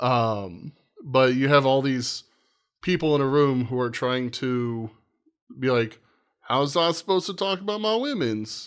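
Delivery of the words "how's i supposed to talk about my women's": put-on Italian accent, pitched up. Describing people in a room trying to talk, imitating an Italian accent. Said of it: "that's my Italian accent".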